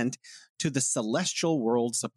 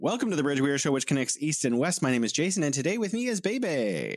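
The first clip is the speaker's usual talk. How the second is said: very fast, rapid-fire, speeding delivery; 3 semitones higher than usual. Host welcoming listeners to The Bridge and introducing the co-host, talking very fast. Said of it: "you're talking so fast".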